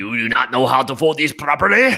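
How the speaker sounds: stern, authoritative put-on Eastern European accent. Voicing a character the speaker attaches to a tone, in an authoritative put-on accent. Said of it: "your voice of authority always defaults to a British accent".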